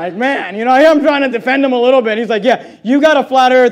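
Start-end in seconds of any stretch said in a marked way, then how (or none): 2.4-3.7 put-on derisive, jeering, mocking delivery. Retelling how someone mocked pastors, imitating someone mocking. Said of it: "he was mocking".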